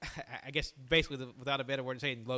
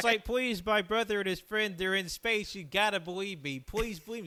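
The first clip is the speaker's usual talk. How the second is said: high, loud, sobbing, desperate crying voice; 7 semitones higher, 6 dB louder than usual. Recounting a movie scene, imitating a girl crying, pleading. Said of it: "she's like crying the entire".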